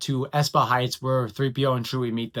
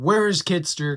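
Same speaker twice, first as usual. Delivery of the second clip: acted scream, higher pitch; 3 semitones higher than usual. Retelling a scene where a squib screams at a woman: imitating a squib screaming. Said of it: "and screams at her, going".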